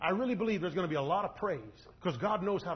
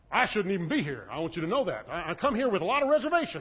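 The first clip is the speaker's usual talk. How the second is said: put-on condescending, grudging, talking-down tone; 4 dB louder than usual. Retelling what a man sent by God to the Gentiles said, mock-condescending. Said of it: "he's being condescending".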